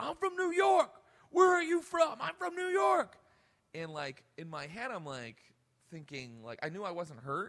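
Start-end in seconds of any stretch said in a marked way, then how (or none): 0.0-3.2 shrill screaming, very high and very loud. Recounting a man screaming at them after the microphone broke on their head, imitating a man screaming. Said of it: "he started screaming at me".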